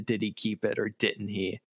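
normal talking voice

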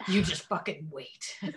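put-on under-breath mutter. Discussing a show, voicing a man's muttered words: imitating someone muttering. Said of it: "Muttering under his breath".

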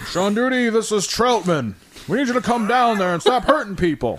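very high, loud voice calling out. Retelling a movie scene, quoting the colonel: Colonel Troutman impression. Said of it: "Colonel Troutman came up and is like".

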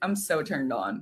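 dry, unexcited, hushed, dead-straight delivery. Talking with another person about a show, imitate Deb in a monotone Deb impression. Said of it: "Deb like monotoned".

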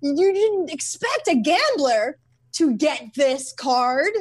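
slow, measured voice, leaning on each word. Imitating a gambler contestant: Wallace Shawn voice. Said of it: "He sounds like Wallace Shawn from Princess Bride".

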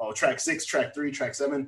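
ordinary talk

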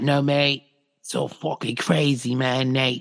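put-on South African surfer-dude accent. Describing a blonde surfer guy and how he talks, imitating a surfer dude's talk. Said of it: "And he talks like that".

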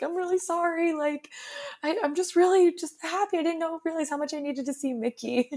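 play-acted high, uncontrolled, gushing blubbering. Recalling seeing a character again at the park, imitating own uncontrolled blubbering. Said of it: "I was like just blubbering".

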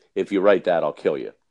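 mock menacing tone, joking, with a smile. Quoting what Mike told the speaker, retelling a joking threat with a smile. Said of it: "goes jokingly with a smile on his face".

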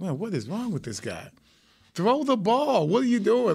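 play-acted high, exasperated, frustrated yelling. Retelling watching a game, imitating own yelling at a player. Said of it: "I was yelling at him".

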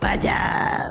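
put-on voice of a possessed demon. On the show, the speaker greets everybody in a demon voice. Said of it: "That was my demon voice".

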